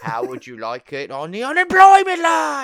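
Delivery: very high, very loud, swooping sing-song delivery. Showing a favorite line from Muppet Christmas Carol: Michael Caine impression. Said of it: "I like to do my Michael Caine".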